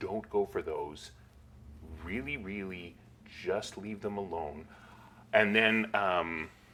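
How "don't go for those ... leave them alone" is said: hushed, very quiet, close, confidential murmur. Voicing a character leaning in close to warn the player: quiet murmur in character. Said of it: "very quietly says".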